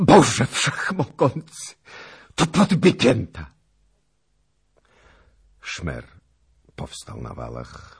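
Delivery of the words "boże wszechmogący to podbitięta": shrill, piercing, very high horrified shout at full volume. Seeing a naked corpse swinging from a rope, he cries out: piercing horrified shout. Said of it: "krzyknął przeraźliwym głosem".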